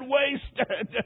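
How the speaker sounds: single word spoken through sobs. Retelling a dying man's last cry: imitating sobbing speech. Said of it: "Then he sobbed and said".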